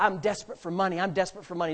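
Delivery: ordinary delivery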